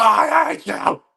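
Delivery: very high, shrill, loud screaming cry. Picking a Star Wars line for stubbing a toe, doing Anakin screaming. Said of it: "Anakin screaming".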